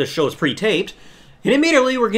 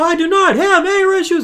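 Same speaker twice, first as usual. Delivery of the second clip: very high, angry voice on the edge of screaming; 11 semitones higher, 3 dB louder than usual. Retelling a man's outburst, the speaker acts him out mock-angry, about to scream. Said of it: "He's about to scream".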